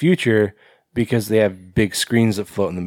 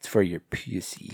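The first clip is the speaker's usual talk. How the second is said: put-on weird, odd delivery, quieter; 2 semitones lower, 9 dB quieter than usual. Retelling a weird line reading of a commercial catchphrase: imitating own odd delivery. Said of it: "Why would you say it like that?".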